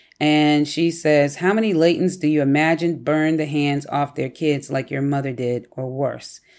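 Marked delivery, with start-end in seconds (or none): none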